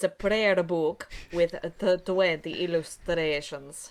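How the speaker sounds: put-on character voice drifting toward a Swedish accent. Voicing a game character describing a prayer book: character voice drifting toward Swedish accent. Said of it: "starting to get close to the Swedish Event Horizon".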